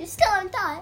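good English accent, pitched high. Chatting with friends about waffles, speaking in an English accent. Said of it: "That was a good English accent".

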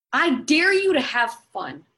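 loud, high, forceful angry voice. Speaker daring a listener to have fun, angry. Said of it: "You sound so angry".

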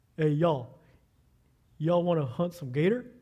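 put-on Mississippi southern accent, game warden type. Speaker retells what a friend said after a funeral service, imitating a southern accent. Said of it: "with his southern accent".

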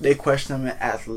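ordinary delivery

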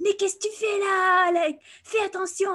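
scolding, very high yell in French. Retelling a policeman stopping her friend: imitating a policeman yelling in french. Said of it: "yelling at her in, in French".

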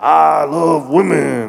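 put-on very loud, rough, declaring shout like an old preacher. Retelling a man's church testimony seen in a video: imitating a deep old pastor voice.

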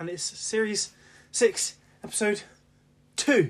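loud, breathless delivery. Podcast co-host introducing the episode after running upstairs, out of breath. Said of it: "You're out of breath?".

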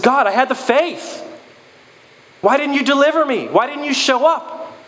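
indignant, complaining tone.

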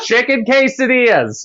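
imitated drunk woman's scream. Retelling what an old drunk lady blurted into a silent room, retelling a drunk lady's scream. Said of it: "She just screamed".

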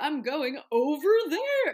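very loud, high, silly goofy comic voice. Mocking how people use voices as humor: imitating a silly comic voice. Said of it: "when they use voices as humor".

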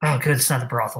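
quiet muttering under the breath. In the game, the speaker's character reacts to which ruined building it is, muttered under breath. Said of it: "Mutter under my breath".

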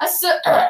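put-on burp in the middle of a word. Retelling own answer to mom about a favorite shape: imitating a burp mid-word. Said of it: "I burp in the middle of it".

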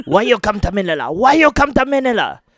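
high, loud put-on Japanese accent, broken English. Co-hosts riff on a Japanese TV show; speaker does a Japanese accent impression. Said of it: "It's my Japanese impression".

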